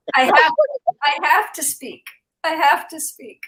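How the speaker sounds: on the verge of tears. Insisting on speaking on a call, on the verge of tears. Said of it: "I'm gonna cry, but I'm gonna speak".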